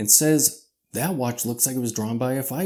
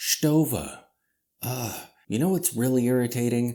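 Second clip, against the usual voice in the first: normal talking voice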